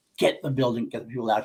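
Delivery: ordinary talk, nothing marked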